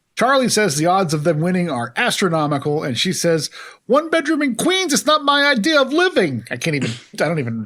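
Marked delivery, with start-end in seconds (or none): 3.9-6.4 put-on ear-splitting Puerto Rican accent, higher. Quoting the character Muriel's complaint: imitating Rosie Perez as Muriel.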